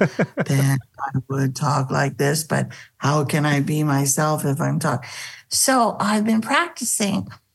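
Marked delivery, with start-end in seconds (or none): 0.0-5.1 low voice dropping down step by step in pitch. Demonstrating a trick someone taught for talking lower: lowered voice. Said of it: "pretend like you're walking down a flight of stairs".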